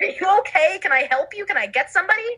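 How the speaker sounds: high-pitched, mock-concerned, worried fussing.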